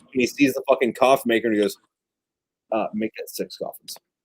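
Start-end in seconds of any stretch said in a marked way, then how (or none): 2.7-3.9 dry, flat, deadpan whisper. Retelling a western scene with the coffin maker: dry deadpan Clint Eastwood delivery. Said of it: "no humor in it, just, like, dry".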